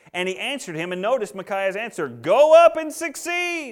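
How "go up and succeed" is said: high, slow sarcastic delivery. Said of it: "if you can't pick up on the sarcasm there".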